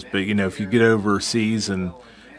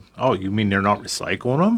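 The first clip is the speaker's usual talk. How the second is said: sarcastic, feigned surprise with a swooping tone. Replying to the other speaker's point in conversation: sarcastic. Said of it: "I'm being sarcastic there".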